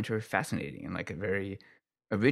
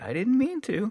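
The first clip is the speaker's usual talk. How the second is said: put-on very high, sweet, cute toddler voice; 6 dB louder than usual. Quoting a child actress's catchphrase from her show, in a cute baby voice. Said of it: "in a cute baby voice".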